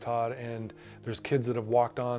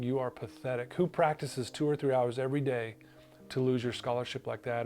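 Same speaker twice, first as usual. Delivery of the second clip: normal talking voice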